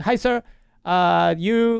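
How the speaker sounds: very slow, high, put-on Filipino accent. Show host retelling a chat with a Filipino lady: Filipino accent impression. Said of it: "I don't want to do an impression of a Filipino lady".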